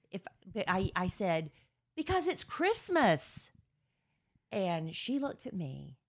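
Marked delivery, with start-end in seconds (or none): 1.9-3.5 put-on yell, pitched way up, very high. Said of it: "Why are you yelling at me like that?".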